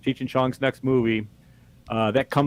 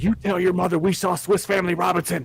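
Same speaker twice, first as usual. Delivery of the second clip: put-on grandmother voice, higher; 6 semitones higher than usual. Retelling what grandmother said walking out of the movie: imitating grandmother's instruction. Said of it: "she's like".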